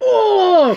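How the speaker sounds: groaning voice.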